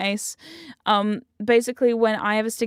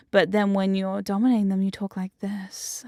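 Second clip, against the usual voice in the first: sexy, seductive voice. Showing how to change one's voice when dominating someone: sexy tone. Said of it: "In this sexy tone".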